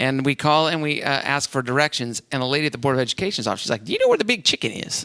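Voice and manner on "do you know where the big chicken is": clumsy, bad Southern accent, very high. Retelling what the lady at the Board of Education's office asked on the phone, not-very-good Southern accent. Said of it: "I don't have a very good Southern accent".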